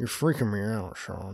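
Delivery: low, very slow, measured dad voice. Quoting the father from the film while discussing it: impersonating the dad. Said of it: "Thank you for that beautiful impersonation".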